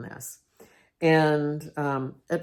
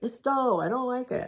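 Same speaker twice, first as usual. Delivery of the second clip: high-pitched put-on small little-girl voice; 9 semitones higher than usual. Retelling own feelings about a task: imitating a little girl. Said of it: "a little girl in me".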